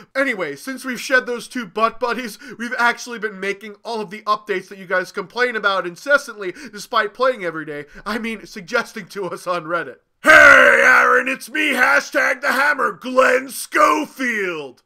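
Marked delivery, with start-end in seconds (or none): 10.2-14.6 loud, slow hollered yell with name stretched out. Acting a skit where an executive drops in, yelling as Glenn Schofield. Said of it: "you don't need to yell like that".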